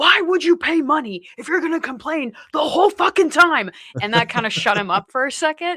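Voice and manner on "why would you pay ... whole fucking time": sudden loud, high-pitched outburst with raised voice. Speaker retells turning to a complaining guy; retelling a loud outburst. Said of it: "loudly I was like".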